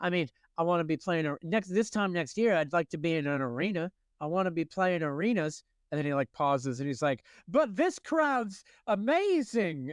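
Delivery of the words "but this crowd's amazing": terrible put-on British accent, very slow and drawn out. Quoting a rock star who pauses to praise the crowd: terrible british accent. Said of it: "I'm gonna do a terrible British accent".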